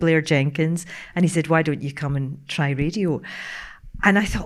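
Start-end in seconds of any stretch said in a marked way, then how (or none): none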